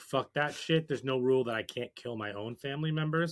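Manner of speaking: ordinary talk, nothing marked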